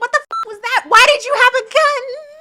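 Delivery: full-volume, very high, shrill angry yell. Retelling a movie scene where she yells at him: imitating someone yelling. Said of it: "yelling at him".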